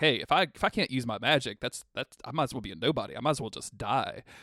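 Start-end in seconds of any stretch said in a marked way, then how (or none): none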